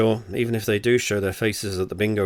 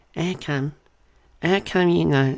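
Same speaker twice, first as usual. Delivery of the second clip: Portsmouth accent, pitched up; 8 semitones higher than usual. Reader retrying a whispered line that mocks a woman, in a mock Portsmouth accent. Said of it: "Lady Portsmouth accent is like quite".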